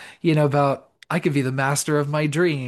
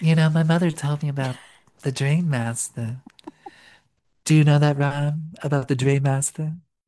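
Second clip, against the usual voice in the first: put-on dumb mousy voice, faster. Retelling what Alice said at school the next day: Alice's super dumb, mousy voice. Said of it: "in her super dumb, mousy voice".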